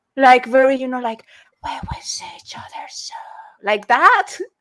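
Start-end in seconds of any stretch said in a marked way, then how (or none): 1.7-3.2 eerie, sinister, creepy, breathy whisper. Describing someone's very creepy way of talking, in a creepy put-on voice. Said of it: "this one is like a very creepy voice".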